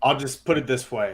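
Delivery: measured, formal executive-style official statement voice. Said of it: "my best, uh, Brody Van Wagenen impression".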